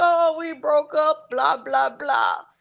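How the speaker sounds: put-on tearful blubbering speech through sobs. Telling how she cried to her daddy after a breakup, imitating her own crying. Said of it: "And I'm just a crying".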